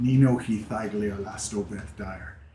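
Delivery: whispered under breath, hushed. Voicing a character who whispers in Elvish to the Genasi, whispering under breath. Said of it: "she whispers something in Elvish under her breath".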